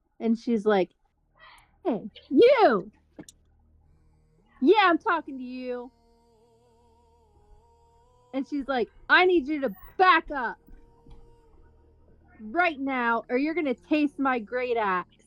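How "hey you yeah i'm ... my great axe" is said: acted angry, ranting voice. Playing a barbarian who glares at an ally and threatens him: in-character angry threat. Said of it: "see you just going off on him".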